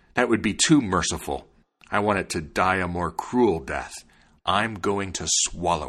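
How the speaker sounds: ordinary delivery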